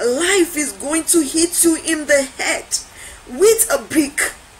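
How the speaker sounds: ordinary delivery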